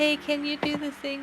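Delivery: meek, small, soft, hesitant timid voice. Showing how messages with no capitals read, the speaker uses a soft timid voice. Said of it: "soft little t- uh, timid voice".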